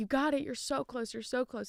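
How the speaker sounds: mock encouraging cheering, yelled. Retelling encouraging other runners during the race: imitating own yelling. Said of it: "I honestly started yelling".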